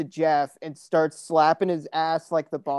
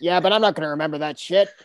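put-on old woman voice. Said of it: "she kinda sounds like that".

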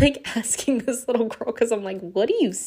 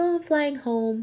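put-on sweetest, purest, soft, high little-girl voice; 5 semitones higher than usual. Retelling what a little girl on a flight said, in a sweet soft little-girl voice. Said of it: "She has the sweetest, softest voice".

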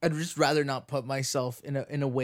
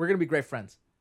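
usual speaking voice

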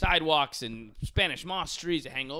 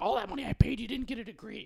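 mock, high, nagging mom voice; 8 semitones higher than usual. Recalling how she used to complain about paying for college, mock-nagging impression. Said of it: "She's like".

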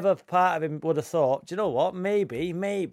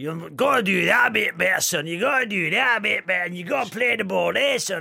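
put-on rough, raspy Scottish accent sliding into Yorkshire accent; 2 semitones higher than usual. Doing an impression for the others to guess: Alex Ferguson impression. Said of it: "Alex Ferguson".

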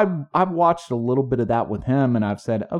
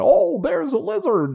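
put-on Australian accent, pitched very high. Showing a doubting listener how Steve Irwin would talk, with a put-on Australian accent. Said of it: "It sounds just like an Australian".

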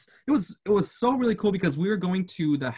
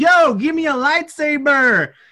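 all-out, loud, high, drawn-out scream at full lungs; 10 semitones higher, 10 dB louder than usual. Retelling asking for a lightsaber as they were handed out: retelling a scream at top of lungs. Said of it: "I start screaming top of my lungs".

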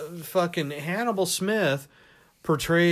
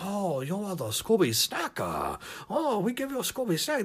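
sing-song, cartoon-style fake Chinese accent; 4 semitones higher, 3 dB quieter than usual. Mocking how cartoons voiced Chinese characters, in a mock Chinese accent. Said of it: "That's a Chinese character".

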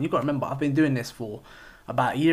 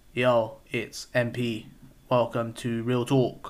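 flat, dead level, slow monotone. Podcast host recalls how he opened his very first episode, retelling a flat monotone intro. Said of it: "sounding bare monotone".

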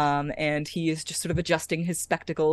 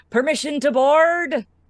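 very loud, high-pitched shout; 11 semitones higher, 9 dB louder than usual. Voicing a character on the dock below calling up to the ship: shouted from below. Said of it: "a familiar voice shout up".

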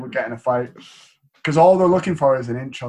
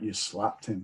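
put-on flat, unimpressed, very quiet, low, hushed deadpan; 4 semitones lower, 14 dB quieter than usual. Retelling how you would react with a hard guy: imitating a flat unimpressed statement. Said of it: "You'd be like".

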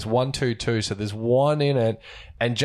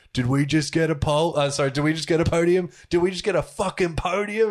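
put-on thick, very Australian accent, pitched up; 6 semitones higher than usual. Retelling a driver's reaction crossing the line: Daniel Ricciardo impression, very Australian. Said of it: "so Australian".

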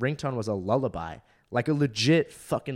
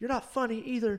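shrill, very high yell; 12 semitones higher, 3 dB quieter than usual. Retelling a line a woman yelled out at the show: imitating someone yelling. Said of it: "she yells out".

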